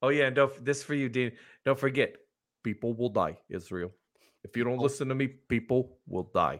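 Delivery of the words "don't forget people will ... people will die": preaching, rally-style stump-speech politician voice. Addressing Israel with a warning line: Bernie impression. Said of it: "That's Bernie".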